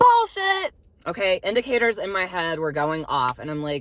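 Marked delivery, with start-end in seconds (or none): 0.0-0.7 high, loud, riled-up cry. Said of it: "I'm getting a bit riled up here".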